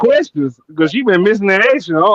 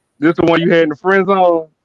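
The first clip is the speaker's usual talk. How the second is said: usual speaking voice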